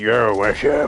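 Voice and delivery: low, breaking, cracking voice. Explaining why they don't shave, imitating their own cracking voice. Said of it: "my voice is like".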